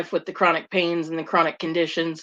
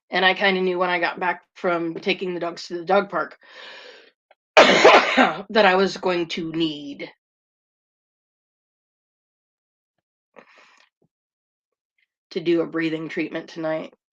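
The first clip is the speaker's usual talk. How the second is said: gravelly, rough, raspy voice. Speaking to viewers while having trouble breathing, gravelly voice. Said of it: "super gravelly right now".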